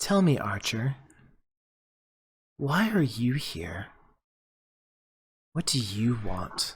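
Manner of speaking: hushed, close, intimate half-whisper. A storyteller voices a figure swirling around Valen, half-whispering in your ear. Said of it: "just like she's whispering in your ear".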